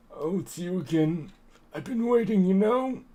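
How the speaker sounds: put-on elderly man voice. Voicing a character answering a visitor who greets him as old man: old man voice. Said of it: "Impeccable old man voice".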